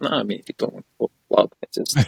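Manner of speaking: put-on disappointed voice. Retelling his reply to wanting to go back to the hotel: imitating a disappointed voice. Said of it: "I could hear like he was disappointed in his voice".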